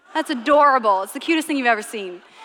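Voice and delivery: ordinary talk, nothing marked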